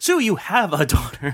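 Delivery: mock scream, high-pitched yell. Retelling a reaction to a show's flashback: imitating own past scream. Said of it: "And I screamed out".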